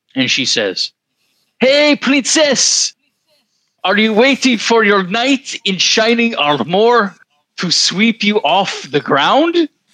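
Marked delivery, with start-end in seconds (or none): 1.6-9.7 put-on thick French accent at very high pitch. Quoting Mom waking the speaker at noon, in a heavy French accent. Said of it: "heavy French accent".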